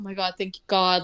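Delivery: loud, thankful, saved-at-last relief. Retelling characters finding the elevator: imitating relieved people. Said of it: "they're relieved, right?".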